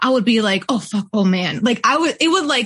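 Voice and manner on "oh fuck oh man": put-on pained, hurt dismay. Retelling checking old box scores and reacting: retelling own pained dismay. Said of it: "it would, like, hurt me a little bit".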